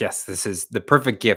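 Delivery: plain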